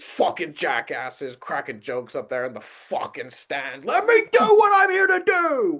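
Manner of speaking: mock-angry furious screaming. Acting out a man fed up with people talking over his jokes, imitating someone screaming angrily. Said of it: "he gets so like like screaming, viscerally angry".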